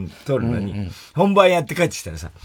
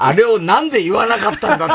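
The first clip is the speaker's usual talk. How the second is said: put-on angry scolding, higher and louder; 7 semitones higher, 5 dB louder than usual. Retelling how Matsuoka scolded someone: imitating someone angrily scolding. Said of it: "松岡が怒ってんの".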